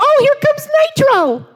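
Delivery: very high, loud, squeaky announcer voice. Showing how hamster gladiator names are announced: put-on squeaky voice. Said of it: "you say 'em in a squeaky voice".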